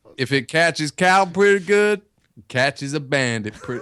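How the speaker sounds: put-on generic American accent. Quoting what a man said, in a normal generic American accent. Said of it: "do normal generic American accent".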